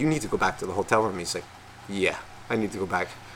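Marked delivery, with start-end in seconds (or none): 0.0-1.2 acted-out whisper, quieter. Retelling a late-night talk with the groom at his bachelor, whispering. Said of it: "I'm like whispering".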